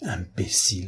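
soft murmur, muttered under the breath. A man reacting to what he has just been told, murmured. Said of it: "murmura Lupin".

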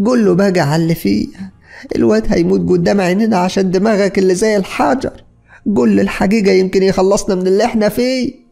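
screaming outburst, very high and shrill. A wife stands up and screams at her husband: screaming at him. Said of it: "وهي بتصرخ فيه".

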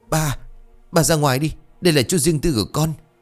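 high, quivering, unsteady, trembling voice. A narrator reads a daughter's line telling her father to leave; trembling voice. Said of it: "Cô cất giọng run rẩy".

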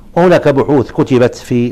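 ordinary talk

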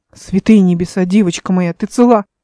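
ordinary delivery, nothing marked

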